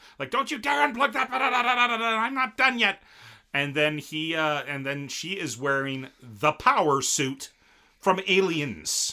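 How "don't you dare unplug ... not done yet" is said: put-on shrieking, very high-pitched screaming rant. Retelling a plot where she screams at him not to unplug: imitating her screaming. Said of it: "she starts screaming at him".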